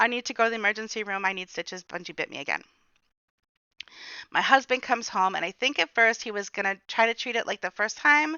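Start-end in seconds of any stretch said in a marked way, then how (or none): 0.0-2.6 mock hysterical sobbing, pleading tone. Retelling a call to the husband after a dog bite: imitating hysterical crying. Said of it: "trying to talk through hiccups almost, like hiccups of crying".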